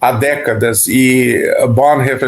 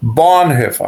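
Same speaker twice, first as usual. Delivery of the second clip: Bonhoeffer with heavy stress on first syllable Bon. Explaining how to pronounce bonhoeffer, stress on first syllable of bonhoeffer. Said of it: "A tônica é a, é a primeira sílaba, então é Bonhoeffer".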